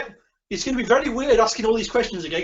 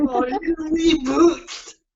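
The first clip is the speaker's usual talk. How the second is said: ogre-like voice, pitched up, "reboot" drawn out; 7 semitones higher than usual. Joking about the computer's reboot to the other speaker, slipping into a Shrek voice. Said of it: "Why did I sound like Shrek then?".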